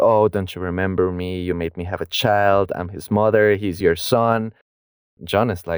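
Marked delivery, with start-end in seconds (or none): none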